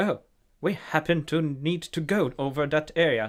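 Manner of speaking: put-on high, posh, fancy British rich-kid accent. Describing a show's main character Rex, the speaker imitates him: Rex's posh rich-kid accent. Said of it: "Not not butler posh kind of accent, but like a fancy rich kid".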